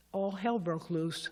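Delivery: ordinary talk, nothing marked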